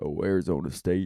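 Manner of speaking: deepest bass-register voice, very low. Retelling a crowd member's answer during crowd work: imitating a very deep voice. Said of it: "the deepest, blackest voice I've ever heard".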